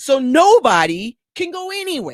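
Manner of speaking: exasperated, frustrated, very high-pitched, drawn-out tone. Complaining about slow school pickup to another speaker, frustrated. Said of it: "You sound very frustrated".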